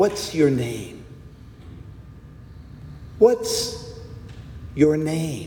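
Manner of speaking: loving, tender, breathy whisper, gentle and calm. Retelling a bible story, quoting a question asked in a gentle, calm, loving voice. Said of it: "asked in a gentle, calm, loving voice".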